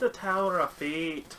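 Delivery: loud, slow, put-on storybook-film Scottish accent. After praising a movie, saying a phrase in a Brave-style put-on Scottish accent. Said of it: "Now I'm gonna be talking like that".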